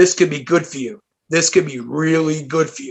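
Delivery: serious, low, hushed remark under the breath. Retelling what his friend said to him, retelling words under his breath. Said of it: "he goes under his breath".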